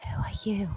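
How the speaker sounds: soft whispered voice. Whispering into a character's ear in the game: whispering in character. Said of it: "can I whisper".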